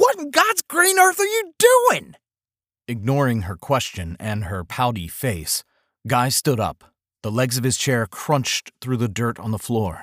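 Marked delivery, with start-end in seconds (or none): 0.0-2.2 shrill, loud holler pitched very high. Myrna, after Guy dumps water on the table, hollering. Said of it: "Myrna hollered".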